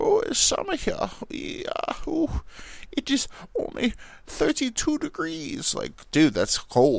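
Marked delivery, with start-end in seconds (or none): 0.0-5.7 slow, breathy, half-whispered fake German accent. Speaker can't think of a Russian impression, so keeps doing a mock German accent. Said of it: "I'll just keep doing because I can't think of a, a Russian impression".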